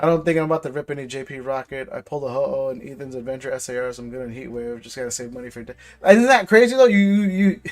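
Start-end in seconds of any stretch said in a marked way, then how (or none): 5.6-7.6 stammered start, tripping over and restarting words. Reacting to something the speaker finds crazy, stuttering. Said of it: "I'm stuttering".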